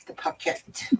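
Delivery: whispered, put-on attempt at a British accent. Saying the word for the sewing piece: attempted british accent. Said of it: "she tries to do the British accent".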